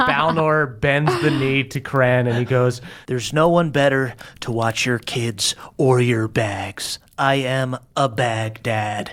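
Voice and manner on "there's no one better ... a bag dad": deep, strange fond voice. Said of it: "Why does that sound so weird?".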